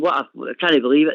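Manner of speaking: ordinary delivery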